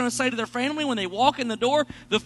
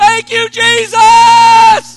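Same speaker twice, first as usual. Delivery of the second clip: very loud, high, tone-deaf yell; 11 semitones higher, 16 dB louder than usual. Retelling a man who was incapable of whispering thanking Jesus: retelling a loud shout of praise. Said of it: "He was just louder than the normal person".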